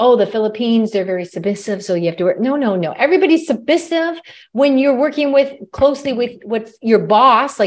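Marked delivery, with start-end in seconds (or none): none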